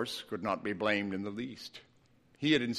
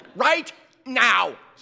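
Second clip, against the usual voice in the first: snapped, very high-pitched and very loud; 13 semitones higher, 9 dB louder than usual. Narrator reads a woman's reply to the dog walker: snapping. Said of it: "snapped the woman".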